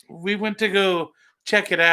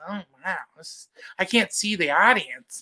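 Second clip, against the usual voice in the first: put-on first-timer stage comic delivery. Imitating a first-timer who says they cannot see the audience: imitating a first-time comic on stage. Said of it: "that's how you know the first timers are there".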